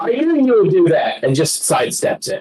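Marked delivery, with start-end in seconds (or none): 0.0-1.2 high-pitched, called-out loud shout. Game narrator voices a character sidestepping an attack, shouting. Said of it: "He shouts out".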